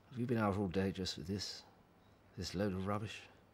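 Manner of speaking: low, disdainful, scornful grumbling. Father looking over his son's cart of junk, questioning him: disdainful father. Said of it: "They are father. Son".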